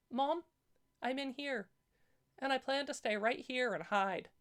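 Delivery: tiny, small, high-pitched little voice. A narrator reads the hiding daughter's answer to her searching mother, in a small voice. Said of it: "a small voice said".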